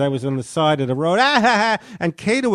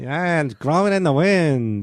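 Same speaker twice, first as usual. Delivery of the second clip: put-on drawling voice. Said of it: "It almost sounds like [name]".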